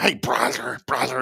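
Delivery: cartoon duck-style chicken voice. Retelling how a man called everybody brother: imitating a loud chicken-like voice. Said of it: "that chicken voice to him".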